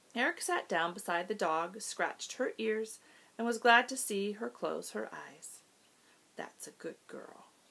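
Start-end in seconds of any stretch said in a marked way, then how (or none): 6.3-7.4 put-on soft, whispered baby-talk murmur. Eric sits beside the dog hurt by a porcupine and scratches her ears: murmuring. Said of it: "he murmured".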